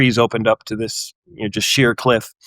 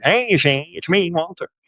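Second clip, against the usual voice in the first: put-on old gangster voice, pitched up; 7 semitones higher than usual. Recounting how he greeted Shane on entering the room, in Walter's old gangster voice. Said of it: "Walter's voice is kinda like an old gangster".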